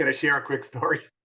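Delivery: speaking through laughter. Asking another speaker if a quick story is okay, laughing while talking. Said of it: "I'm sorry for laughing".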